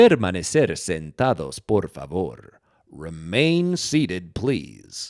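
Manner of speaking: deep, slow theme park loudspeaker announcer voice. Showing an imitation of the theme park announcer: imitating a theme park announcer. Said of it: "I've always loved imitating, like, the announcer guy".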